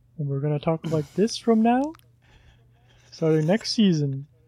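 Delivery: joking, nice, soft quiet voice. Joking about talking nice and quiet from next season on: nice and quiet voice. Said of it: "talk nice and quiet into our microphones".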